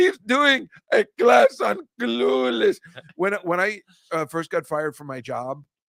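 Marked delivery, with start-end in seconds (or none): 0.0-2.8 very high, slow, rough, creaky put-on voice. Retelling how the booker called someone over: imitating the booker calling out. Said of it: "That's not a horrible imitation".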